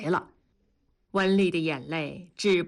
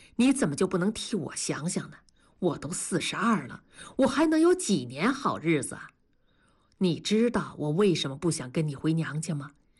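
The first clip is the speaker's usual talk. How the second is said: usual speaking voice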